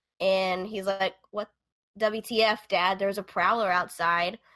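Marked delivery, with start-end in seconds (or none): none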